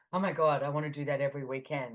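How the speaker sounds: ordinary delivery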